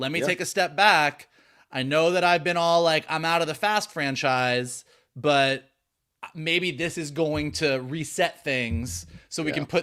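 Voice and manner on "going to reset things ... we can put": ordinary talk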